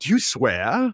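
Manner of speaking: put-on very slight, faint English accent. Quoting a woman on a show as she slips into a very slight English accent. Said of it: "she throws in a very slight English accent".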